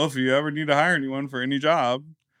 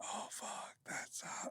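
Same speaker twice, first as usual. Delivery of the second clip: slow, breathy whisper, kept right down. Retelling how a sleepy partner talked: imitating someone whispering. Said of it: "everything was whispery".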